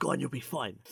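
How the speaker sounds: whispering. Retelling a man leaning in to reassure a woman: retelling a whisper. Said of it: "he whispers to her".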